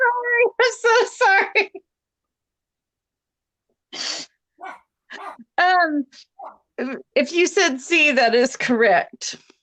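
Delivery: helpless, teary, hard laughter through words, pitched high. Giving a quiz answer, eyes watering, laughing hard. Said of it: "I'm laughing so hard".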